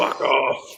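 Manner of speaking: put-on big, drawn-out Scottish accent. Describing a favourite film scene where a rescuer shouts, Kevin McKidd's big Scottish drawl. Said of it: "in his big Scottish drawl".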